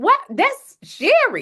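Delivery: very high squeak, pitch leaping and swooping around. Retelling seeing own picture on a billboard: imitating own high-pitched voice. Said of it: "My voice get all high".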